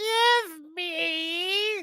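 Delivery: very high-pitched, shrill, loud screech, me stretched. Narrator voicing something right above the party's heads: screechy voice. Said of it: "This screechy, screechy voice says".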